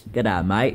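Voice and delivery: put-on Australian accent. Playing up an accent someone called australian: put-on australian accent. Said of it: "my accent sounds like Australian".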